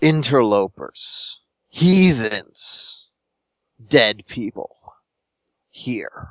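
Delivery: big, loud, booming, slobbering roar. Narrating to players, voicing something chained to the wall: loud, booming, slathering voice. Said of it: "you hear a loud, booming, slathering voice".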